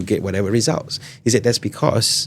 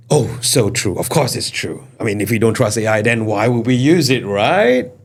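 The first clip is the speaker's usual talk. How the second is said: mock agreement, sarcastic; 3 dB louder than usual. Answering whether ai always gives accurate answers: sarcastic fake agreement. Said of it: "I'm being sarcastic".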